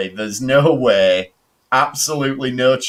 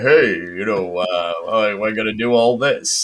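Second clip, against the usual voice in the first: put-on deep, cool voice; 3 semitones lower than usual. Describing a man who reminds them of a character, doing his voice: Ace Rimmer-style deep voice. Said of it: "He's like sort of making his voice deep".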